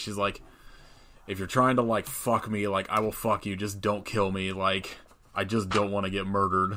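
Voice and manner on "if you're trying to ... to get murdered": usual speaking voice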